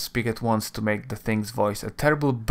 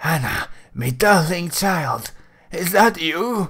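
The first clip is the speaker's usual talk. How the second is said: hoarse, croaking, pitched-up croaky voice; 7 semitones higher than usual. Narrator voicing a head risen from the slime, addressing its child, croaking. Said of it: "It spits out a mouthful of bloody cysts and croaks".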